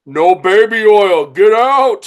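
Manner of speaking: blunt, dismissive, loud. Retelling a story where Andre answers Macho Man: Andre the Giant impression. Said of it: "Andre would just look at him and be like".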